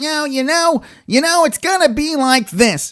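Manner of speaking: very high, whiny, annoying voice. Imitating a fighter after calling his voice whiny: terrible Chael Sonnen impression. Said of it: "that's a terrible Chael Sonnen".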